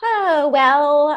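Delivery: sounding excited. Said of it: "You sound so excited about that".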